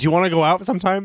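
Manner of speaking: mock nervous blurt, very high-pitched. Recalling asking a girl out, the speaker retells a blurted question. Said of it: "I think I just blurted".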